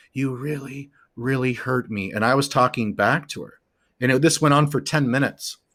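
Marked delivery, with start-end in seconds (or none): 0.1-2.1 hushed, soft half-whisper, barely any voice. Retelling what the girlfriend in a hallucination said: imitating her half-whisper. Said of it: "She was whispering".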